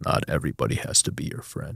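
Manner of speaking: level, hushed, breathy, flat, soft monotone drone. Recalling a mentor's advice during a relationship struggle, imitating a flat monotone. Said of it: "he had like this real monotone voice".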